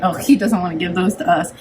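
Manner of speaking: plain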